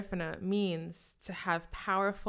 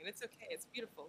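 very quiet voice, speaking through tears; 15 dB quieter than usual. A host thanks Jamira for her Instagram shout-outs on the episode: crying. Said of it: "and I'm already crying".

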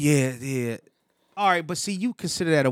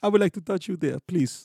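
bad, trashy put-on Indian accent; 3 semitones higher than usual. Acting out a flirty scene, in a bad Indian accent. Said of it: "My Indian accent is trash".

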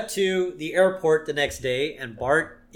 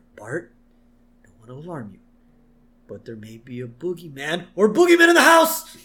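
put-on character whisper; 6 dB louder than usual. Retelling a scene, Homer goes to Bart's room: Homer whispering to Bart. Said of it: "he whispers to Bart".

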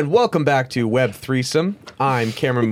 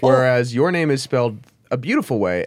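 normal talking voice

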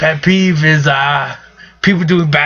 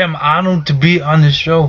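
put-on Austrian accent. Guest on a show, doing an Arnold Austrian accent impression. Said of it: "I just do Arnold".

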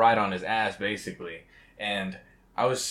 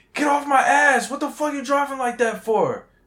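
play-acted aggressive yelling, very high and shrill; 6 dB louder than usual. Retelling a road encounter, the speaker quotes the aggressive driver: retelling an aggressive yell. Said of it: "he was yelling at me".

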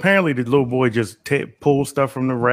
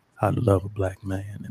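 put-on radio voice, lower in pitch; 5 semitones lower, 6 dB quieter than usual. Host announcing the next segment title: 95.9 radio voice. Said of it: "I gotta get my 95.9 voice".

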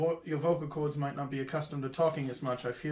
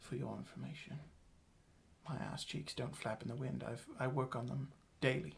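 whisper, much quieter; 2 semitones lower, 10 dB quieter than usual. A player's character leans down to another character: whispering into her ear. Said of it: "I lean down and whisper into her ear".

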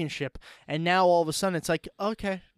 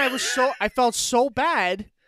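ordinary talk, nothing marked

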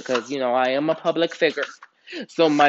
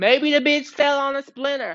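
mock, very high-pitched, joking throwaway quip; 11 semitones higher than usual. Retelling a comment about a woman shot in the foot, the speaker quotes a joking remark.

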